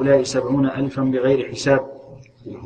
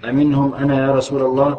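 ordinary talk

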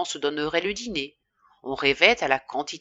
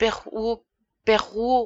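stammering, much higher pitch; 6 semitones higher than usual. Addressing the farmer who has just laughed softly at him, stammering. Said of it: "balbutia Charles".

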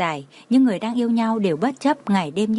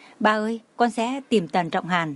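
plain reading voice

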